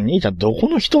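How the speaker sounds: usual speaking voice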